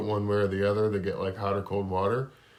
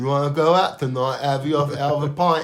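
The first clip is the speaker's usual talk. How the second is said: loud, pitched-up put-on British bloke accent; 5 semitones higher, 7 dB louder than usual. Two podcast hosts riff on accents; one joins in: mock British accent. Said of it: "That's definitely one of the accents out there".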